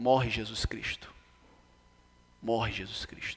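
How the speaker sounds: quiet, low whispering.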